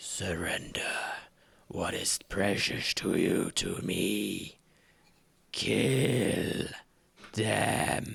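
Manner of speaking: low, creaking whisper.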